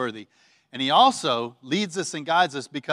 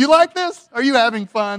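put-on amused laughing voice, higher and louder; 8 semitones higher, 7 dB louder than usual. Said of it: "we'd hear him laughing".

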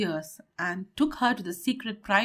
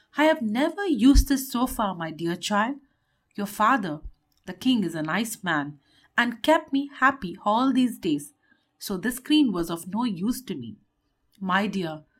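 ordinary delivery

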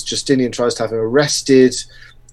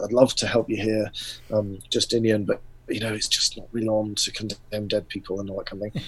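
hushed, half-whispered voice; 2 semitones lower, 10 dB quieter than usual. Retelling what Vigilius told Justinian, imitating Vigilius half-whispering. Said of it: "Vigilius is kind of whispering this".

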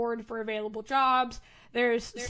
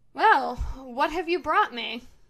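unwelcoming, put-out, displeased, grudging tone; 3 semitones higher, 4 dB louder than usual. Voicing a guard captain who greets unwelcome visitors: scowling. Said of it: "her expression settles into a scowl".

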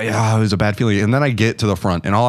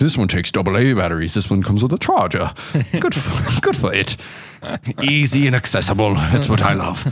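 convincing put-on British accent. Acting out reading about sex toys in a shop, in a good british accent. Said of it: "the first time you've ever done a good British accent".

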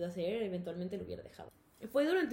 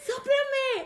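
demanding yell, very high, very loud and shrill; 10 dB louder than usual. Retelling how mom caught her smoking, imitating mom yelling. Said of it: "Y me gritó como tres veces".

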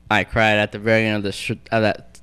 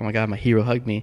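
plain

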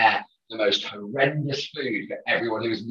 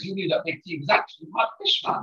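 attempted Geordie accent, pitched a bit higher; 8 semitones higher than usual. Recounting a favourite moment, quote what he said in a Kyle voice, attempted Geordie accent. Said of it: "That's my attempt at a Geordie accent".

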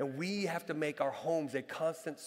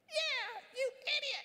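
put-on tiny, very high, piping little-kid voice. Retelling a child in the back seat copying a shout: imitating a tiny child's voice. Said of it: "this little bitty voice coming from the back seat".

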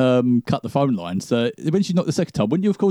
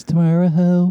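put-on calm, emotionless voice, higher; 5 semitones higher, 4 dB louder than usual. Recalling a creepy bit in an advert, imitating a calm, emotionless voice. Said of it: "It's so calm and sort of emotionless".

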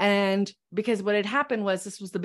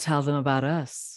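put-on deep, husky, low voice of an older man; 6 semitones lower than usual. Recalling an older mentor's words, the speaker imitates Connie's deep husky voice. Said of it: "in her deep and husky voice".

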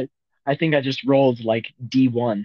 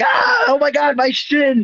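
very high mock pained cry. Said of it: "the guy goes like".

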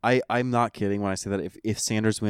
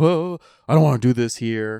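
loud, raised, flustered, blurted voice; 3 semitones higher, 7 dB louder than usual. Retelling Warren confronting Sanders after the debate; imitating flustered Sanders. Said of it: "he just gets all like flustered and is like".

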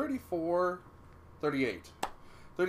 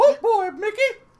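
put-on cartoon mouse voice, much higher, louder; 14 dB louder than usual. Mid-conversation, trying out a Mickey Mouse voice. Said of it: "impression of Mickey Mouse's voice".

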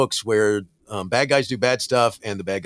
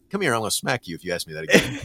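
mock irritated machine voice with menacing tone. Imagining the ai annoyed at a question: imitating an annoyed ai threatening. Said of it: "it would be looking at me going".

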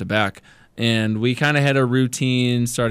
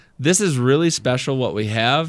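plain

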